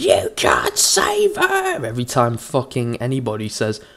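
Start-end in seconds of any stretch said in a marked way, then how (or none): 0.0-1.9 very high, very slow, rough, swooping shriek. Mocking how someone reacts to critics in comments: imitating someone shrieking. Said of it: "shrieking at the top of your lungs like".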